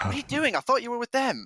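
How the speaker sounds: hushed whisper. Voicing a woman who whispers to Paul so the rest can't overhear: whispering. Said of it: "she whispers to you so that the rest can't overhear".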